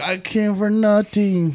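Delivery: put-on Mexican accent. Imagining what Jamie would say about skipping the podcast, imitating Jamie, Mexican accent. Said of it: "a Mexican accent".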